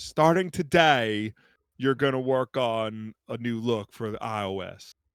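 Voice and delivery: thick homespun folksy drawl, loud and slow. Acting out a company boss walking into the designer's office: Tim Cook folksy accent. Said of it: "with that folksy accent of his".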